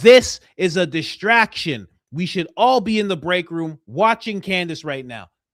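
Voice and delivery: loud screaming and yelling. A coworker comes in complaining about a distraction at work, screaming. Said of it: "scream about work being a distraction".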